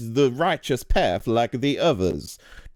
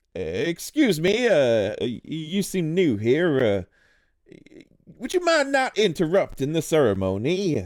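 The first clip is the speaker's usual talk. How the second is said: fake-polite, pitched-up, put-on courteous voice; 5 semitones higher than usual. Voicing a figure who walks over to a newcomer, fake polite. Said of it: "um like fake polite".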